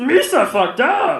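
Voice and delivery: high-pitched, loud, dumb cartoonish alien voice. Joking about what Jar Jar Binks was smoking, in a dumb Jar Jar Binks impression. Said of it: "That's a dumb impression".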